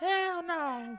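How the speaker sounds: very high-pitched meme-style voice. Reacting to a news story with an impersonation of a meme. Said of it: "That was my impersonation of the meme".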